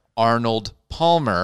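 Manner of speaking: slow, careful enunciation. Showing how the drink name must be said: slow, careful pronunciation. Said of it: "I actually have to slow myself down".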